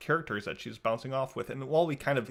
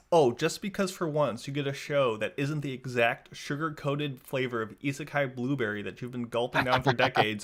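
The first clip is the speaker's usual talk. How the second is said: normal talking voice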